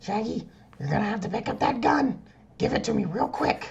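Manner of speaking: very high-pitched cartoon mom voice. Trading cartoon impressions with a friend doing Shaggy, Marge impression. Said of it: "I'll do my Marge impression".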